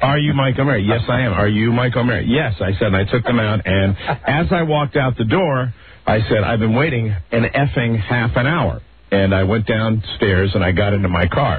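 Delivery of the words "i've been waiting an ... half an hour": ordinary talk, nothing marked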